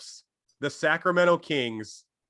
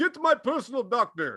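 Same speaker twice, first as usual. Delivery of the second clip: put-on Russian accent, pitched higher; 9 semitones higher than usual. Joking about a dying Stalin calling for a doctor: bad Stalin impression. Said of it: "He doesn't even sound Russian at this point".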